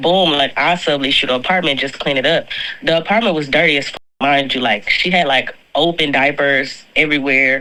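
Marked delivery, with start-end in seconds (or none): none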